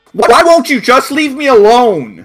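shrill, very high, full-volume shriek. Voicing Martin as he flies at Azatha, shrieking.

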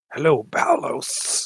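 strangled creature voice forced out through a choke. Narrating a game scene where a tentacle speaks to Balos, choking voice. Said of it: "it says in a sort of choking voice".

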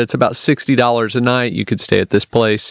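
ordinary delivery

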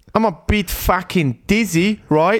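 attempted Australian accent. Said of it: "Australisch kann ich nur".

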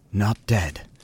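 worn-out, tired, weary tone. A narrator reads his answer to Frirla, who thought him dead, said wearily. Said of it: "he said wearily".

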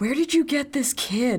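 loud theatrical whisper. Asking Maya about a strange kid before the guard leaves: loud whisper. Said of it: "make a loud whisper to Maya".

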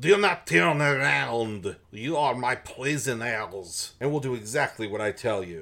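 thick put-on French accent. Reading a story aloud, a hidden captor orders the girls: heavy French accent. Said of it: "they hear a heavy French accent".

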